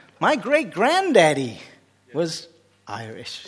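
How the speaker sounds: attempted American accent. Retelling a tourist explaining their family background to you, voice them in a put-on American accent. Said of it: "I don't do American accent".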